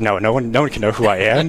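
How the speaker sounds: ordinary delivery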